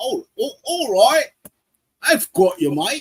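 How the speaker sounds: put-on drawn-out, very high Australian accent. Voicing the computer's reply when clicking a button: Australian accent. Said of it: "It sounded like an Aus-, Australian there".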